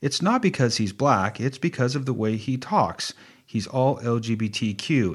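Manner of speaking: ordinary talk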